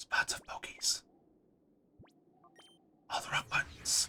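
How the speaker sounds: hushed whisper. Speaker commenting while looking around, whispering. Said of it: "I don't know why I'm whispering".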